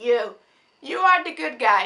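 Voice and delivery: very loud exclamation, voice cracking and breaking. Pointing out the good guy in a movie: voice breaking. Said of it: "my voice just broke, I'm sorry".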